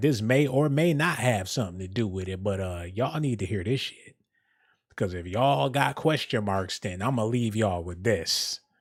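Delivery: play-acted newsman voice, matter-of-fact and knowing. Mocking a news reporter's closing line: imitating Jim Dolan, matter-of-fact knowing tone. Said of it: "like he knew something".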